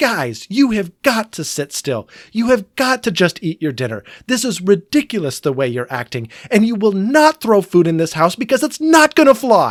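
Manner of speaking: acted-out stern scolding, yelling. Speaker retells scolding the kids at dinner, re-enacting yelling at them. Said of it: "yelling at the kids".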